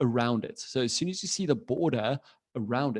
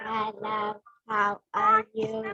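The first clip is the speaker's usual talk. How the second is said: robotic voice, higher-pitched; 9 semitones higher than usual. Greeting the others after being asked to do a robot voice: robot voice. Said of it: "did you wanna do a robot voice as well?".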